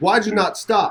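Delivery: mild, moderate yelling. Retelling a police stop, imitating an officer yelling. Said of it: "he's yelling at me like".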